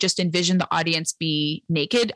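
plain

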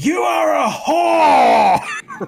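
very loud, very high, shrill, rough, drawn-out screaming. Retelling a wrestler leaning down toward a dancer: imitating someone screaming. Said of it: "just screams at her".

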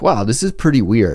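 plain

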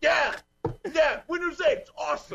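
put-on, very high-pitched yelling. Imitating Ballmer, who just yells at people: yelling Ballmer impression. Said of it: "Ballmer just got up and he just yells at people".

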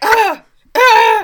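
high, loud, panicked yelping.

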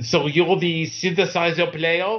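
put-on French accent, laid on thick. Retelling what a man at the studio asked: imitating Maurice's French accent. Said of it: "he has this very French kind of thing".

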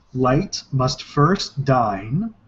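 very slow, careful, deliberate delivery.

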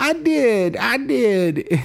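put-on very high, very slow, drawn-out young boy voice. Retelling a movie scene where the boy answers his mom: imitating Noah. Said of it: "That's a spot-on Noah impersonation".

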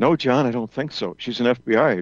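mock whispering. Retelling what a range officer said back to him: imitating someone whispering. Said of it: "he whispers to me".

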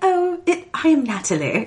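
put-on sweet, high-pitched, slow British accent. Imitating Villanelle slipping into a put-on accent: Villanelle's sweet British accent. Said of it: "sweet British accent".

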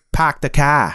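put-on, shown-off Boston accent. Joking about which planet has a Boston accent: Boston accent. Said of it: "What planet has a Boston accent?".

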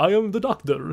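clichéd Romanian accent, edging toward German. Asked to do Bela Lugosi, playing a Romanian doctor: Bela Lugosi accent. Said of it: "Still kind of sounds German".

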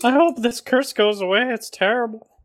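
mock elderly lady voice. Joking about a curse with the other speakers: put-on old lady voice. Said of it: "You sound like an old lady".

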